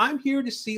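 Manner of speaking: cheery, happy voice. Retelling meeting Mister Rogers, quoting his reply: imitating Mister Rogers, happy and very quiet. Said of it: "with that happy, like, very quiet demeanor".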